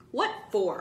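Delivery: pushing, pressing, insistent, demanding tone. One friend challenges another's warning to stay away, demanding. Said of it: "Michael demanded".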